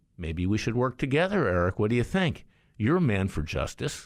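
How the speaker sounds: mock, very sarcastic, good-natured, swooping sing-song. Retelling what was said to an adversary on a flight: retelling a sarcastic remark. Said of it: "I say that very sarcastically".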